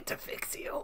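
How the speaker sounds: very quiet, breathy, barely audible near-whisper. Doing a requested impression of RFK Junior. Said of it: "he did the voice".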